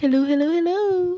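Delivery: shrill, very loud, high belted delivery. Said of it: "That was my best [name] impression".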